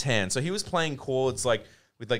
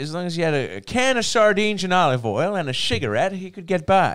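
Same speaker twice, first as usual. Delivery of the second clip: put-on old-timey 1930s voice, higher and louder; 6 semitones higher, 8 dB louder than usual. Describing a musician in an old photo: 1930s voice. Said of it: "that's a good nineteen thirties voice".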